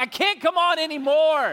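high, drawn-out, play-acted preacher's yell. Retelling gripping the podium while preaching: retelling his own yelling. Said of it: "and I'm yelling".

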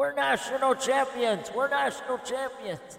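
high-pitched, loud screaming.

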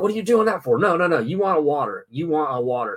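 forceful, insistent shouting. Recounting a dinner where he yelled at them; retelling someone yelling. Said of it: "he's like yelling at me".

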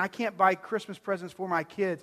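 ordinary delivery

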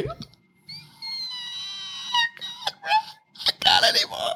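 weepy, very high, soft sobbing voice. Speaker acting out their own crying at home: imitating high-pitched crying. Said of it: "you hit a high pitch".

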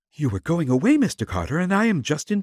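eager, urgent, excited. A young woman hurries from a car to stop a man leaving: quiet but excited. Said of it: "she said quietly, yet in some excitement".

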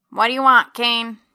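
high-pitched, through the nose. Narrator voicing a crumpled little man speaking to Kane, high nasal voice. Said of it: "His voice is high-pitched and seems to come from his nose".

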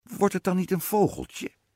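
high, quavering voice, shaking and trembling. Reading the queen's question to the witch, in a trembling voice. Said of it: "zei de koningin met bevende stem".

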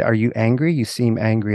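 normal talking voice

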